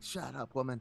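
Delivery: plain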